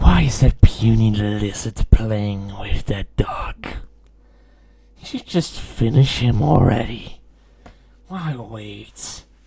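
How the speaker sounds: very loud, rough, booming, animalistic beastly roar. Voicing a mysterious voice that only one listener can hear, very animalistic, rough voice. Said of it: "You hear a very animalistic, rough voice".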